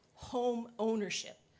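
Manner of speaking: "home ownership" emphasized. Urging an amendment to a housing proposal: stress on home ownership. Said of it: "I stress that word".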